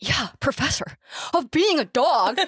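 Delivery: high surfer-dude talk. Retelling a scene where Grim answers one of the girls, Grim's surfer voice. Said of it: "kind of speaks like, kind of like a surfer".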